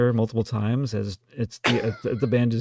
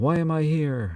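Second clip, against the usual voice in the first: very slow, stretched-out cry; 5 semitones higher than usual. Joking about a made-up track that ends with John Huston yelling. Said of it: "John Huston just yelling".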